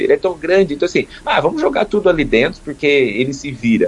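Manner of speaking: tongue-in-cheek, ironic, dismissive tone. Speaker describing society's view of the ocean, in an ironic tone. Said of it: "Estou falando aqui ironicamente".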